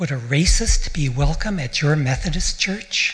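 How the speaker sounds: mock aghast, scandalized, shocked, disapproving tone. Recounting a question people asked, the speaker imitates a scandalized voice. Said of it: "asked in a scandalized voice".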